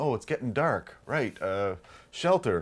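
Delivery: ordinary delivery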